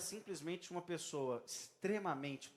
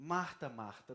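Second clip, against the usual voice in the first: paternal, almost fatherly tone; 4 semitones lower than usual. Acting out Jesus calling Martha twice: Jesus's put-on almost fatherly tone. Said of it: "aquele tom quase que paternal".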